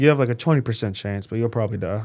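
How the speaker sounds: mock deadpan, flat and blunt. Retelling what the surgeon said to a thirteen-year-old: imitating deadpan doctor. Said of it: "that was too blank stare for me".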